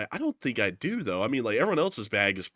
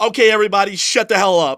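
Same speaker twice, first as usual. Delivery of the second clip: put-on angry announcer voice, higher and louder; 9 semitones higher, 12 dB louder than usual. Retelling a flight attendant's announcement before takeoff: imitating an angry flight attendant. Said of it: "They already sounded angry".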